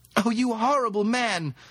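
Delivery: high-pitched shouting through laughter. A woman swings her purse into the fog, hits someone, and shouts with laughter. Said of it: "she shouted with laughter".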